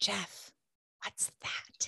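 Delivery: acted-out whisper. Retelling a first interview, asking the man under the camera: retelling a whisper under breath. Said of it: "I'm whispering under my breath".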